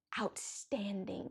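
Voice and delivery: slow, hushed whisper full of awe.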